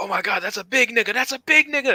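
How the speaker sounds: mock very high, freaked-out shrieking, climbing in pitch. Retelling a streamer freaking out as a monster approaches: imitating Etika screaming. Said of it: "he just starts screaming".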